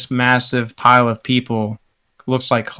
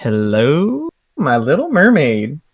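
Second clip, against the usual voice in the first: sleazy, leering, very slow sing-song delivery; 3 semitones higher than usual. Voicing a crewman who slicks back an eyebrow at a mermaid: leering flirtatious pickup line. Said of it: "puts a finger in his mouth and slicks back an eyebrow".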